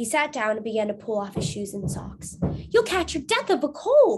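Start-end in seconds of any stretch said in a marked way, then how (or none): 2.7-4.2 exclamation pitched very high. A woman cries out as a man prepares to wade into an icy stream; crying out. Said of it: "cried Mrs. Lincoln".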